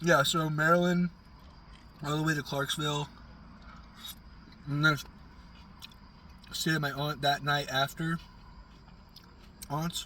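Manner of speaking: talking mid-meal while eating. Recounting a drive to clarksville between bites, talking while eating. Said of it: "I'm sorry for eating and talking".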